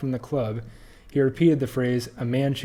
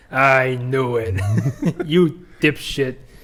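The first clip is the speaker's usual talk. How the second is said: heavy put-on Bronx accent, loud and slow; 5 dB louder than usual. Recounting what a video game character says, in a thick bronx accent. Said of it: "he has like this thick Bronx accent".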